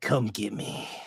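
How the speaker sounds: hushed, breathy, whispered calling voice. Voicing Jedediah calling out again to the player: Jedediah's voice. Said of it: "you hear his voice again going".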